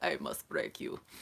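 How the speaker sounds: put-on hushed, breathy voice in a Russian accent. About to pull a card, the speaker decides to be Drago: Drago impression. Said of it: "I need to be Drago".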